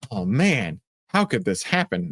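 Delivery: laying on sarcasm, ramping up. Reacting to shares falling after earnings beat estimates: sarcastic tone. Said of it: "My sarcasm's ramping up real quick".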